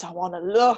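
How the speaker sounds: put-on deep, low demonic voice from below. Retelling what she insisted to him, in a deep demonic voice. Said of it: "some deep demonic voice".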